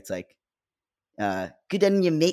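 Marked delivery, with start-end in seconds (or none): 1.2-2.3 slow New Zealand accent, in the nose. Chatting with a co-host about accents, try out a nasal new zealand accent. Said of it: "it's more like a little in your nose".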